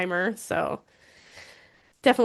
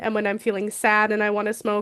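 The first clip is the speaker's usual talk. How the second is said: plain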